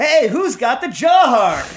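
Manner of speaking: high, loud calling-out voice on "hey". Retelling the moment they turned around and called out, in their best hey voice. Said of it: "go in my best hey voice".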